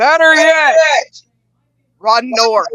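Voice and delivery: very loud, slow, high, drawn-out yell, every word deliberate. Voicing a stranger who turns and calls out: yelling very loudly in character. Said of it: "she yells out very loudly".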